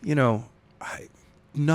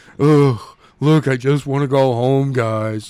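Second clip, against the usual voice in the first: dopey-sounding voice, louder; 7 dB louder than usual. Voicing a book character as another character hears him: dumb-sounding voice. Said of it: "why does he always sound like he's just dumb?".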